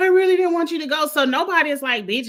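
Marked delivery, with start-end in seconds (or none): 0.0-1.1 put-on weepy sobbing, high, rushed crying voice. Talking about voted-out players, imitating them; mock crying. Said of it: "Because everybody's crying".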